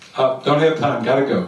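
ordinary talk

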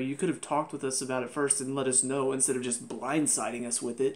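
usual speaking voice

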